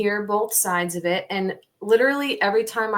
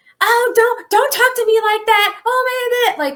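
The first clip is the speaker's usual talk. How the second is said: mock very high, loud, frantic outburst; 8 dB louder than usual. Retelling an argument with the manager present, imitating Nancy freaking out. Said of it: "Nancy started freaking out".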